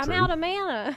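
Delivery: put-on New Jersey goblin accent, high and slow. Describing game voice lines, the speaker voices their goblin in an attempted Jersey accent. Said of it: "my attempt to try to do a Jersey accent for my little goblin".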